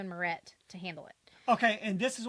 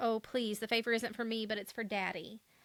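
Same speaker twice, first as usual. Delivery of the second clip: put-on tearful, pleading voice. Retelling a show scene where a character pleads: imitating Sissy crying. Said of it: "Sissy starts crying and is like".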